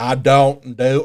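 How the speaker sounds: thick, heavy Southern drawl. Repeating a coworker's phrase back to her: thick Southern accent. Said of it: "a really thick Southern accent".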